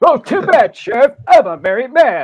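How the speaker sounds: shrill, very high, very loud cartoon toy voice. Doing a quick impression for listeners, then naming it: Mr. Potato Head impression. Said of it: "that's my impression of Mr. Potato Head".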